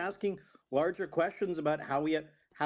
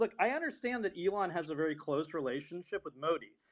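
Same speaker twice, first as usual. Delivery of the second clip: plain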